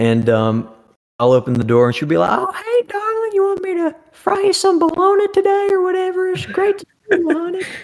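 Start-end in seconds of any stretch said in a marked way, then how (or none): 2.3-7.6 very high, homey Southern grandma voice. Imitating her greeting when the speaker opens the door, southern grandma voice. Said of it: "just authentic Southern grandma voice".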